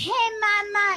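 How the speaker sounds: very high, patronizing, talking-down tone, mama drawn out. Retelling how best friends greet a new mother: imitating a patronizing tone. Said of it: "they all talk to you like you've had a traumatic brain injury".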